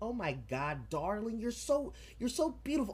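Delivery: very high-pitched, gushing, doting mother voice.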